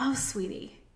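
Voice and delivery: soft, tender, loving, compassionate whisper. Demonstrating how one's loving self sounds: compassionate, loving tone. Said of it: "Like just compassionate".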